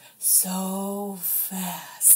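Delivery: so dragged way out, very slow, deep. Quoting a line from The Office: super slow Kevin voice. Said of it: "like super slow".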